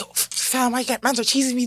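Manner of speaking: angry Toronto street-talk accent. Showing how the speaker talks when mad: imitating own angry Toronto accent. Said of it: "If I'm mad, yo, now I'm just like".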